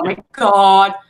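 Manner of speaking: mock-frightened horse voice. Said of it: "she acts like she's afraid of it".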